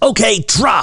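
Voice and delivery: play-acted, very high pitched screamed yell. Retelling the father's order on the speeding sailboat: imitating father screaming. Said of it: "And he screams".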